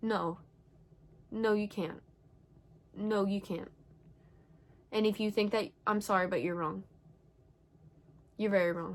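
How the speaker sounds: voice straining to hold anger in. Speaker tells listeners they are wrong, trying not to let anger out, angry. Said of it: "I'm trying to not let my anger get out".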